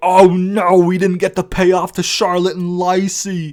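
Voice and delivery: loud, stretched-out outraged voice. Imagining how people would react, in a mock-outraged voice. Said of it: "That outraged voice that I just did".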